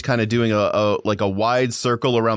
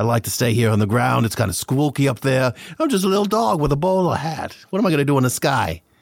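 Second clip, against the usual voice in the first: thick put-on New York accent, fully leaned into; 3 semitones higher than usual. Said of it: "really leaned into a pseudo New York accent".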